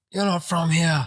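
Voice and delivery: hostile angry shout. Recounting a man being dragged out and yelling at a bouncer, reenacting his yell.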